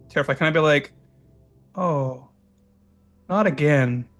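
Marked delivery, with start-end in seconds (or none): 1.8-4.1 whispered, very quiet. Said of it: "that's very quiet".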